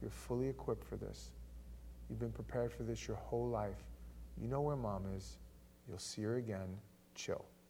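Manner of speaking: gentle, soft, hushed reassuring whisper.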